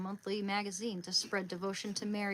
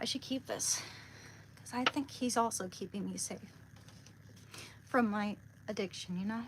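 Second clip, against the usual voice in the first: tearful speech, weeping while talking. Talking to viewers about a prayer to a saint, crying. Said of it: "I don't know why I'm crying".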